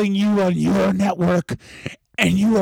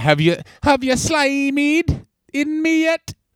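drawn-out, high, slow bad Australian accent. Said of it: "we're so bad at accents here".

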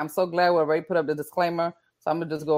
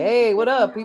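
put-on casual, pitched-up newborn baby voice; 5 semitones higher than usual. Describing a newborn in a photo, voicing the newborn baby. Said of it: "He just like".

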